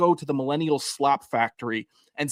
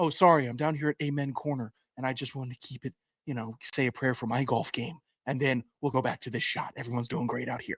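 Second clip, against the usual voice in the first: corny, hammy, hammed-up broadcaster delivery; 2 semitones lower, 8 dB quieter than usual. Imitating a golf broadcast cutting to someone at Amen Corner: corny Jason Kelce impression. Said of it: "corny, bad shtick the entire time".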